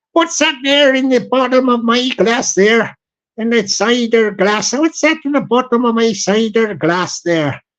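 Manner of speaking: put-on southwestern English accent. Retelling what a man would say over his cider glass, in a southwestern English accent. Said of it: "You hear my southwestern accent".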